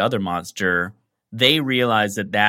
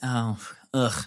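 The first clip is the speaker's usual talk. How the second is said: mock offhand, put-upon, casual, mildly bothered voice; 7 dB quieter than usual. Imagining how the driver who drove away would sound: put-on casual, bothered voice. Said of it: "I just imagine him being real casual about it".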